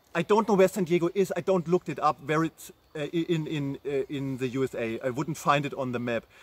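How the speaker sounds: normal talking voice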